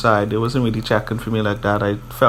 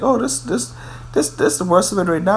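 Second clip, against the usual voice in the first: high, fast, snotty delivery. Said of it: "she was all snotty and Alexis is like".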